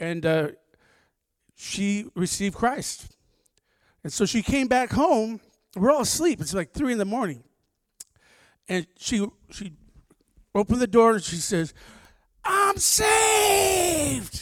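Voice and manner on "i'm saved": play-acted, super loud, very high shout, drawn out. Retelling her coming home at 3 in the morning; retelling a loud yell. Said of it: "She yelled super loud".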